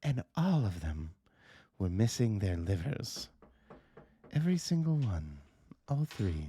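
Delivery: hushed whisper. Voicing a campus police officer who leans in close: whispering. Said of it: "whisper to you".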